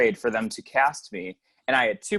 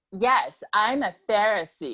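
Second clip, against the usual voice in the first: high-pitched, camp, sassy, flamboyant voice; 8 semitones higher than usual. Speaker recalls their own voice performing a line as a kid: retelling own sassy voice.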